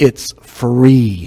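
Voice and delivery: very slow, word by word, free drawn out. Speaker addressing the viewers watching online, said really slowly. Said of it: "let me say this really slow".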